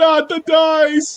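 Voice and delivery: panicked, very high inner scream, dice drawn out. Reacting in character as a player drops the dice: screaming in my head. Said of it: "in my head, I'm screaming".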